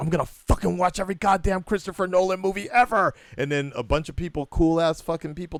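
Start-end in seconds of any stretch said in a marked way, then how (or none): 0.0-3.1 mock, high, screamed out loud. Recalling the end of a movie, the speaker re-enacts their outburst: retelling a scream. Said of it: "and I just screamed out".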